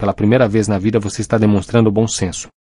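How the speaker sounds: plain reading voice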